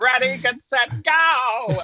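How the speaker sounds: high squeaky voice with stretched-out go. Retelling the countdown that annoyed her, in an attempted Donald Duck voice. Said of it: "his Donald voice being like".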